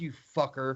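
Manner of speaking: soft, quiet, under-the-breath muttering.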